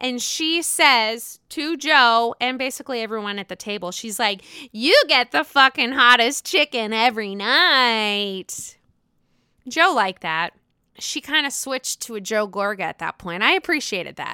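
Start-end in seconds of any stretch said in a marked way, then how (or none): 4.7-8.8 put-on drunk voice. Retelling a line said at a dinner table: imitating drunk speech. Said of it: "She's drunk A F".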